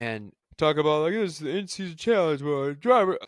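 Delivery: loud words spoken through a yawn. Describing something he watched to the other speaker, yawning while speaking. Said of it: "Sorry, I'm yawning".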